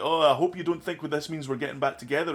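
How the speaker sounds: play-acted catty, sweetly barbed, snide, needling tone. Retelling how Mary Jane digs at Peter: imitating Mary Jane's snide remark. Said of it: "little, like, snide remarks".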